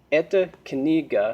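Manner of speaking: usual speaking voice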